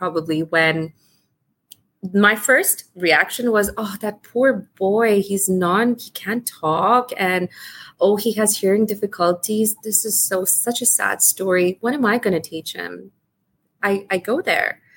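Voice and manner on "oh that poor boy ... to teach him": usual speaking voice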